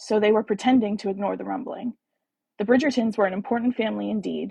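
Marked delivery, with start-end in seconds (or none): none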